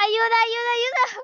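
frightened, terrified, pleading high-pitched cries. A gamer being chased in a game calls for help: terrified cries for help. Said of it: "¡Qué miedo".

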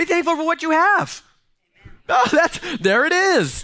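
high, full-throated yelling. Speaker addressing listeners directly, later apologizing for it, yelling. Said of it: "I'm sorry for yelling".

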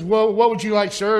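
ordinary talk, nothing marked

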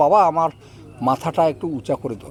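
plain

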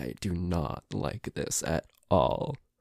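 very scared, terrified voice. Being guided while basically blind through the house: terrified. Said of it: "I'm so fucking terrified right now".

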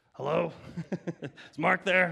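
gruff, rough-edged voice. Retelling a phone call from a search team member: imitating a gruff, rougher voice. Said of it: "it was a gruff, rougher voice".

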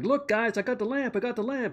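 mock worked-up eagerness. Retelling a scene where a character finds a lamp: imitating someone excited. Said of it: "He's all excited for some reason".

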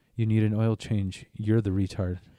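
ordinary delivery

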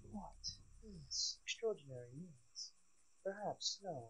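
put-on British accent. Speaker shows how a British niece really talks, British accent. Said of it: "She talks like this".

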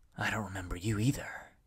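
soft whisper under the breath. A man answers a woman who has forgotten him, whispered. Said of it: "he whispered".

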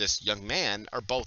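plain

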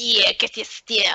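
put-on thick New York accent. Describing a Final Fantasy 15 character, the speaker quotes gangster Ignis, thick New York accent. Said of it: "Ignis with a really thick New York accent".

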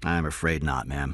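ordinary delivery

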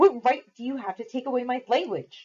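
sharp snapping tone. Ruth, told by Nestena to speak no English, answers her back, snapping. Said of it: "she snapped at Nestena".

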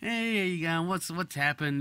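easygoing, relaxed, calm, laid-back, slightly high. Describing how ambulance call-takers answer the phone, imitating a laid-back voice. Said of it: "Just really laid back sounding like".

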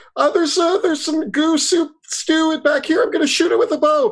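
very high-pitched shouted call-out in a character voice. Playing a character who warns the others about a monster: yelling in character. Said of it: "I yell out, I'm like".

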